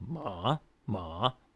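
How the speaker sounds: third tone on ma, dipping low then rising. Explaining tones to kids, the speaker demonstrates a word: dipping then rising tone. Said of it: "aim down to the bottom of my vocal range and let it bounce up".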